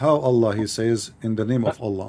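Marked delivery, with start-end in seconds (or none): none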